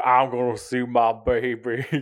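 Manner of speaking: put-on insane Southern accent. Retelling a movie scene, imitating Nicolas Cage's Southern accent in Con Air. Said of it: "got this insane accent, Southern accent".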